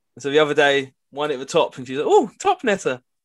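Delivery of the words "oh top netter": put-on voice pitched way up high. Retelling what she said when a ball hit the top of the net, imitating her voice. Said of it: "I don't know what I'm doing with her voice".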